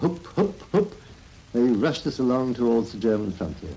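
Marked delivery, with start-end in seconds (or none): 0.0-0.9 high, mock calling-out voice. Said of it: "calling out".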